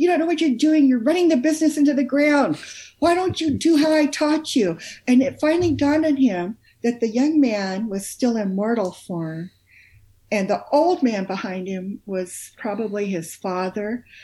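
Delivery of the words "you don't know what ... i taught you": put-on overbearing elder voice, loud, high, berating hard. Retelling a near-death story of an elderly man behind a young man: imitating an old man yelling. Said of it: "elderly man who was just yelling at him".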